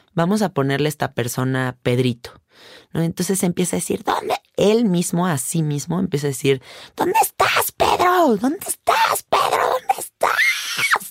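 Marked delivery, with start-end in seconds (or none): 7.0-11.1 unhinged, deranged voice with very high-pitched calls. Retelling how a person screams to himself in a fit: imitating deranged screaming. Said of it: "Como desquiciado".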